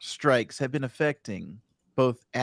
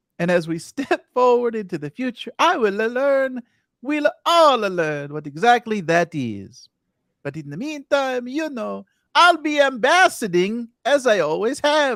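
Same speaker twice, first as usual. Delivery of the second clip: high, loud, chirpy, cheery character voice. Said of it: "he said".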